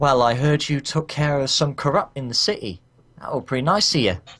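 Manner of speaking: put-on Cockney accent. Voicing a character whose quirk is a cockney accent, attempted cockney accent. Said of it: "her quirk is a Cockney accent".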